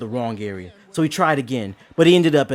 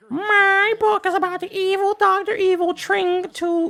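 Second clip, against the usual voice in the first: put-on very high child's reading voice. Reading a book summary they wrote as a child, in best 11-year-old voice. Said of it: "in my best 11-year-old voice".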